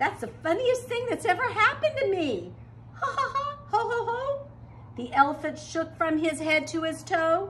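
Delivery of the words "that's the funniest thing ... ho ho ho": high, giggly laughing voice, giggling throughout. An elephant who forgot to sneeze begins to giggle: giggling. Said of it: "He began to giggle".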